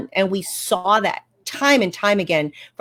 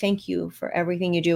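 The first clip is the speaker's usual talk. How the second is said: tender, compassionate, very soft and gentle; 2 semitones lower, 7 dB quieter than usual. Retelling how he thanked people for everything they do, in a very soft voice. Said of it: "with such a soft voice".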